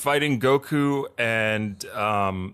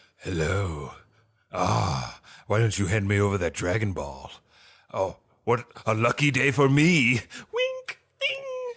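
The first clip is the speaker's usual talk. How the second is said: big, deep dragon voice; 3 semitones lower than usual. Describing how the character acts in the other version, deep dragon voice. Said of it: "in that deep dragon voice".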